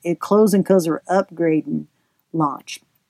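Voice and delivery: put-on Southern American accent, performed for show. Announcing the program's closing, say it in a put-on southern accent. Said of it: "I should say this in my southern accent".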